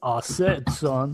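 cartoon rooster voice. Joining a group bit, saying the catchphrase in Foghorn Leghorn voice. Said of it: "Foghorn, leghorn".

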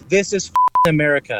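ordinary delivery

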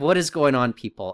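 normal talking voice

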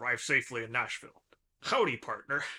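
fatherly dad voice. Asked by another speaker, reading his dad's text message: imitating his dad's voice. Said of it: "Can you do your dad's voice".

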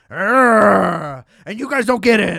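play-acted surly angry metalhead, drawn-out "arrgh". Mocking a show's angry metalhead character: imitating an angry metalhead. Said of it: "he hates everybody, and he's real angry".

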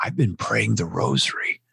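acted-out, mock whispering voice. Speaker retelling what a man said to them: retelling a whisper. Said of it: "and he's whispered".

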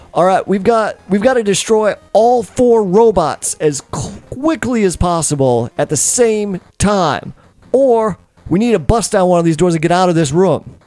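high yell, calling out. In a tabletop game, a character calls to the group, yelling out. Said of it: "And he yells out to the group".

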